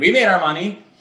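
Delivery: high, loud, carefree, bragging don't-care attitude.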